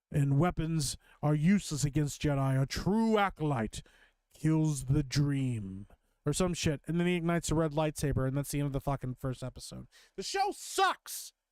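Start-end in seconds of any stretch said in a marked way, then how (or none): 0.1-5.8 sinister, creepy villain voiceover. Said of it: "Generic creepy bad guy voice".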